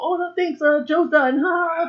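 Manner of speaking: high, mocking assistant voice, dismissive.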